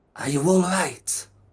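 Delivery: spoken in a whisper. Voicing a character who checks the three of them for kobolds: whispering. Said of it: "whisper to".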